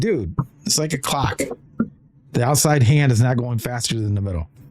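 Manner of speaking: ordinary talk, nothing marked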